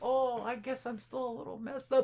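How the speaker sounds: sweet little voice, high and soft. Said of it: "he has a sweet little voice".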